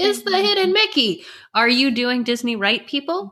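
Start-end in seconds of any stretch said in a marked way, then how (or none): 0.0-1.2 put-on very high, shrill, shrieking child's scream. Retelling a kid's reaction on the boat ride: imitating a kid screaming. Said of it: "my kid's screaming".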